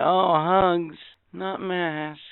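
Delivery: mock, soft, very slowly drawn-out derisive tone. Ranting, quoting people who say hugs not masks: mocking imitation. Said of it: "for you fucking assholes that sit there and say".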